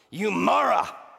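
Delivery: put-on furious rant. Retelling the story of striking the rock twice: mock-angry Moses outburst. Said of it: "moses in his anger".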